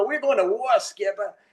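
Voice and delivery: put-on Massachusetts accent, pitched very high. Retelling what his master chief told him; Massachusetts accent. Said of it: "I tell this story with my Massachusetts accent".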